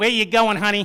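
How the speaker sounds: put-on New York accent. Retelling an Amtrak worker at Penn Station asking where he's going, New York accent. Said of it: "in her finest New York accent".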